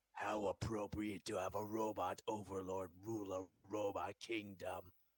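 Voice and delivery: very low, flat, monotone robot overlord voice. Trying out a voice for a robot overlord, robot overlord voice. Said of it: "the voice is actually pretty good".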